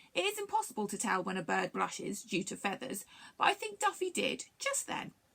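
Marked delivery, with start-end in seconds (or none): none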